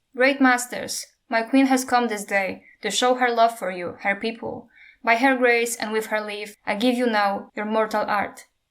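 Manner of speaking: plain reading voice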